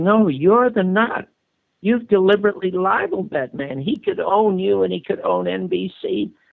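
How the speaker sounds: enraged, furious, high-pitched screaming. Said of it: "I started screaming at him".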